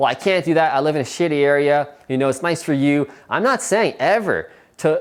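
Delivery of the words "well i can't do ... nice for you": ordinary talk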